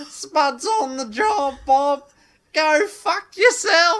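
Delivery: loud, high, shrill, booming, slow, drawn-out kids'-cartoon voice. Recreating a drunken Snapchat of Spud impressions. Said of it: "me doing Spud impressions".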